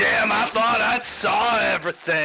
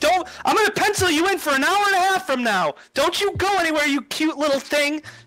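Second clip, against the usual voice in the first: put-on fussy voice, higher; 8 semitones higher than usual. Voicing a busy organizer thanking a violin player: Georgie character voice. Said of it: "and she's like".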